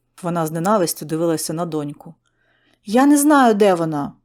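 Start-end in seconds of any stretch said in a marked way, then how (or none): 2.9-4.1 shouting, louder and slower. Snapped at by her mother, the daughter answers, shouting back. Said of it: "крикнула у відповідь дівчина".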